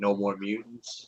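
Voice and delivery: ordinary delivery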